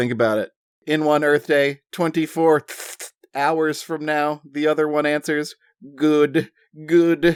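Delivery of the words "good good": short, mumbling little alien creature voice. Narrating a story, voicing the short alien's muttered reply, short alien voice. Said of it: "Excellent alien voices".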